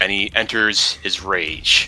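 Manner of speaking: usual speaking voice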